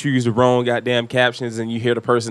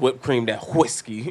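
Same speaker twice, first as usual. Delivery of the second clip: cartoon voice, whipped sounded with a hard pushed h; 6 dB quieter than usual. Saying a phrase the way Stewie says it: Stewie voice. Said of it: "You gotta say it like, like Stewie says".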